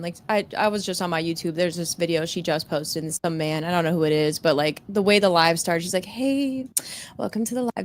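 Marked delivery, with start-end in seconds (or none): 6.0-7.8 real soft, hushed, high, soft-spoken voice. Retelling how a woman opened her live video, imitating a real soft voice. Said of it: "Just real soft".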